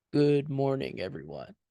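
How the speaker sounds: voice dropped low, deep and resonant. Demonstrating for a learner how to go deep, deep resonant voice. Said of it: "Find that deep voice".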